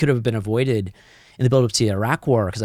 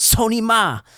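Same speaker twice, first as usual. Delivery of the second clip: put-on furious shriek, very high-pitched; 11 semitones higher than usual. Recounting kicking a man's car door as he drove off; retelling own yell. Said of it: "and I yelled".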